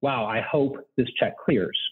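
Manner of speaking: imitated quiet mutter under breath. Retelling what a mother said at the checkout line: imitating a mutter under her breath. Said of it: "under her breath".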